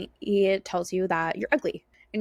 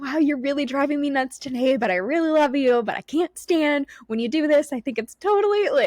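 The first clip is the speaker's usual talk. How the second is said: really excited, upbeat, pitched-up voice; 6 semitones higher, 4 dB louder than usual. Retelling what gets said to a frustrating dog: imitating an excited voice. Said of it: "in a really exciting voice".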